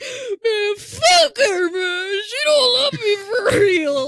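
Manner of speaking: mock boo-hooing, blubbering, crying sob-talk. Retelling what a crying contestant said after the date: imitating a guy crying. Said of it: "And he's boo-hooing, bro!".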